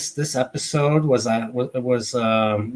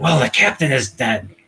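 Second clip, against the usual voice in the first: put-on grouchy character voice. Retelling an episode, the speaker quotes McCoy: grouchy McCoy impression. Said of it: "grouchy McCoy".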